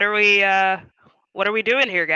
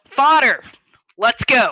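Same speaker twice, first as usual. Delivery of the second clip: loud shouted yell; 4 semitones higher, 6 dB louder than usual. Player's character turns to the group to leave: yelling. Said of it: "I turn to the group and I yell".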